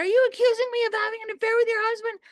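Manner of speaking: yelled, high, loud, voice shaking. Retelling Vicky confronting the speaker, imitating Vicky yelling. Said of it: "she started shaking and yelling".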